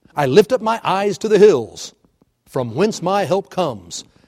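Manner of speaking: level statement tune, falling on comes. Discussing a psalm often read at funerals: read as a plain statement. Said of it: "we sometimes read it as if this is a statement".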